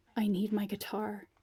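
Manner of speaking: plain reading voice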